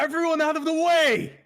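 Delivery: loud, shrill, very high-pitched yell. A character orders a crowd to clear a path, yelling. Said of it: "he's just gonna yell like".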